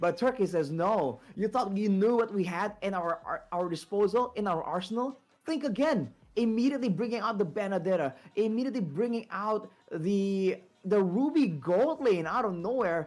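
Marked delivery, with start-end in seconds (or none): none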